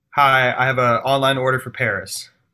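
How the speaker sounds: ordinary talk, nothing marked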